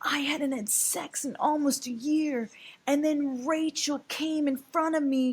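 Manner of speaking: very high, put-on, almost-tearful fake crying voice. Retelling what a man said, imitating his almost-crying voice. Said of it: "he starts doing his like almost cry voice".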